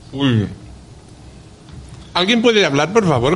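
speaking with mouth full of food. Tasting sweets in a guessing game, the speaker is talking with mouth full. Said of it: "Que yo tengo boca llena de turrón".

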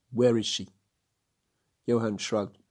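ordinary talk

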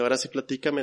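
ordinary delivery

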